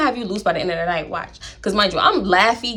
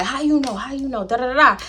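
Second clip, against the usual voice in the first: put-on New Orleans accent; 3 semitones higher than usual. Retelling a man's reply after hearing Baton Rouge, imitating a New Orleans accent. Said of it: "he sounded like he was from New Orleans".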